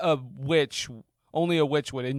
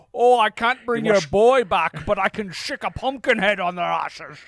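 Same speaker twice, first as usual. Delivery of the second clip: loud, raised, booming Scottish accent, witch voice; 7 semitones higher, 5 dB louder than usual. Voicing the witch the way she should have been played: Sean Connery voice as the witch. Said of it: "She should have had a Scottish accent or been played by Sean Connery in a wig".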